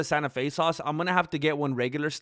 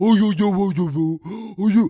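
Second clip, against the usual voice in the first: loud, drawn-out doggy talk voice; 4 semitones higher, 8 dB louder than usual. Showing how they talk to the dogs, talking to dogs. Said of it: "That's how I talk to the dogs".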